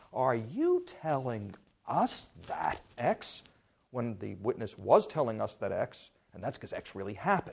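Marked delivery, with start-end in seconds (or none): 0.1-3.4 very slow, drawn-out, swooping, disbelieving incredulity. Showing how a lawyer questions a witness: incredulous tone. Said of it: "incredulity in the tone of voice".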